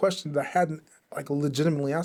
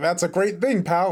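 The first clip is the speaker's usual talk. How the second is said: loud, put-on, condescending, over-friendly talking-down voice; 3 semitones higher, 4 dB louder than usual. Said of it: "Why are you speaking so loudly?".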